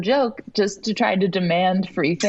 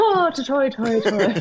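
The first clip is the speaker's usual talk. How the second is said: put-on stock Irish accent, pitched up; 5 semitones higher than usual. Demonstrating the only irish accent they can do, irish accent. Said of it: "That's the only Irish accent I can do".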